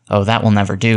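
ordinary delivery

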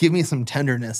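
ordinary talk, nothing marked

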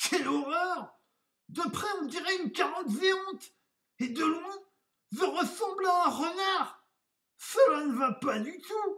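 very high, loud cry of dismay. A wolf looks at himself in his mirror once more, exclaiming.

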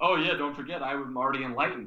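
scoffing, derisive, mocking delivery. Retelling own past words about being enlightened: imitating a mocking tone. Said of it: "Totally mocking the Akashic Records".

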